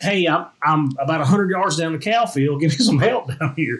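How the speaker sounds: mock half-shouted mild holler, radio style. Wrestling a man down, calling over the radio for help; retelling a holler. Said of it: "I'm hollering like".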